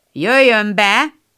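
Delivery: grumbling, grumpy-sounding voice. A voice in the study answers Beth's knock, in a grumbling voice. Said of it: "egy morgós hang kiszólt".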